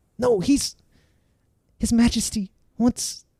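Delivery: high, slow, urgent, anxious pleading.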